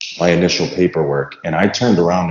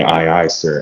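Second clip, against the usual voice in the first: usual speaking voice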